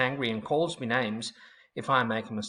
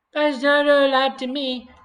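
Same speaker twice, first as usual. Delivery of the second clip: high-pitched, whiny, taunting mocking voice; 14 semitones higher, 9 dB louder than usual. Narrating a bully repeating the narrator's words back, in a high, whiny mocking voice. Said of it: "Dana repeats in a high, whiny voice".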